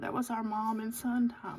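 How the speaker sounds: voice barely holding back tears, on the verge of crying. Mother recalling her weekend time with her son, trying not to cry. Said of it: "I'm trying not to cry".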